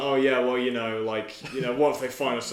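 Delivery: ordinary delivery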